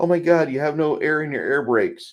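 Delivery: high, loud, panicked mock scream like an alarm.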